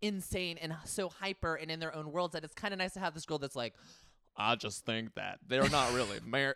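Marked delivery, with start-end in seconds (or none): 4.4-6.6 acted clinical monotone, low, flat, no lift. Describing the one calm girl among hyper ladies, imitating her deadpan monotone. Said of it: "Like her voice is so like monotone".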